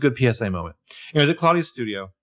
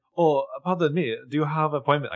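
jokey, comical put-on German or Russian accent; 2 semitones higher than usual. Retelling what the new assistant asks a visitor, comical foreign accent. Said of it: "the new assistant with the comical accent is like".

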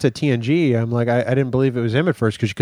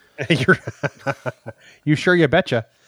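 put-on Minnesota accent; 2 semitones higher than usual. Continuing a joke after a poor Canadian impersonation, Minnesota accent. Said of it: "that's drifting into Minnesota now".

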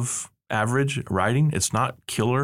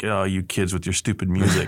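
mock gruff father voice, lower; 4 semitones lower than usual. Imitating the dad you expect in the story: imitating a gruff dad. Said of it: "this gruff".

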